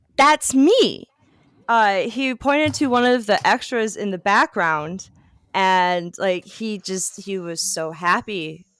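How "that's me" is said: imitated shouting, higher pitch and louder. Retelling what he shouted at a movie still, imitating someone shouting. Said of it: "he shouted".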